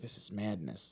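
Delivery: mock whisper. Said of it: "whispering into the camera".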